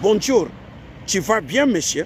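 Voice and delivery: put-on American accent on French words. Speaking to Africans, imitating an American speaking French. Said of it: "Quand un Américain parle français".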